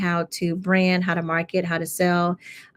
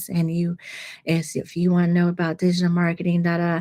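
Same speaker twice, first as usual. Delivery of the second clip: put-on soft monotone voice. Mocking the woman who taught a boring course, imitating soft monotone voice. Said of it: "soft monotone voice and she was talking like this".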